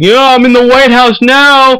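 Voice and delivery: high, slow, smug, triumphant mock voice.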